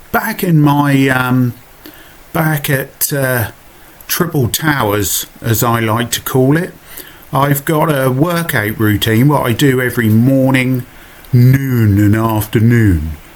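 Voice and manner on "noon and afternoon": slow, pretentious put-on voice. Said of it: "Don't I sound a bit pretentious".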